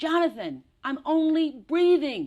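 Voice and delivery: very high, very loud, shrill, drawn-out yell. Retelling finally yelling back at the one giving notes: retelling own yell back. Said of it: "I finally yell back".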